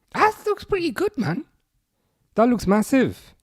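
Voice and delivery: Welsh accent slipping in unintentionally. Reacting to the home-team stadium a viewer shows him, sounding welsh. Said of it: "I don't know why I sounded so Welsh there".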